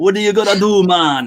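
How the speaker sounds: clumsy Jamaican accent. Trying accents after being asked: attempted Jamaican accent. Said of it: "that's a Jamaican accent".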